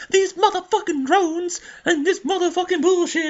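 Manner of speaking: squeaky, very high-pitched profane rant. Retelling a movie's ending in a Samuel L. Jackson impression. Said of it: "that's my Samuel L. Jackson impression".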